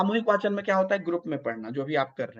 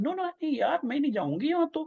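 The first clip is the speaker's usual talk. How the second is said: Delhi-style tone, pitched up; 8 semitones higher than usual. Imitating someone who talks in a Delhi tone, Delhi-style tone. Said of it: "ये पूरा टोन में दिल्ली में बोल रहा है".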